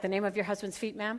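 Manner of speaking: put-on flat, deadpan tech guy voice. Retelling a techie reading back the security question, imitating a deadpan techie. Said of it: "this really deadpan techie guy".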